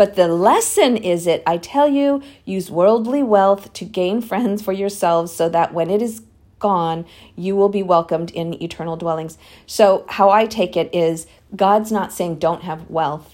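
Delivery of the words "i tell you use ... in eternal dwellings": normal talking voice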